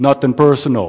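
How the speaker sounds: mock Brooklyn gangster voice. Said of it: "that's my Brooklyn accent".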